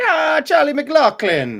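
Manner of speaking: clumsy, bad put-on Irish accent, very high. Reading out a name with cultural flavor: bad irish accent. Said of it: "I don't I don't do a good Irish".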